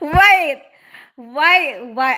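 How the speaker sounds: loud speech broken up by laughter. Answering a question about liking different roles, laughing while talking. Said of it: "I don't know why I'm laughing".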